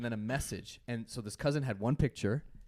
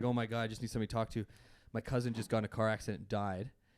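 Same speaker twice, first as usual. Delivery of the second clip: sobbing, bubbling, tearful crying voice throughout. Retelling what she said while crying on the phone, imitating someone crying. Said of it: "and she's crying, like bubbling, crying on the phone".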